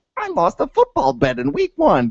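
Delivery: very high-pitched puppet-show voice mimicry. Having lost a football bet, mimicking the co-host's words in a Muppet voice. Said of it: "mimicking me in a Muppet voice".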